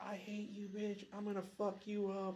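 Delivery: put-on, high, hostile screaming tirade. Retelling how Jill screamed at her from beside a stoplight: imitating Jill screaming. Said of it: "Jill is just screaming at me".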